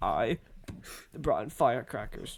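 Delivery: whispered, hushed, breathy, fighting off tears. Retelling a boy confessing to the teacher in front of everyone, imitating him holding back tears. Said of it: "he's like trying not to cry".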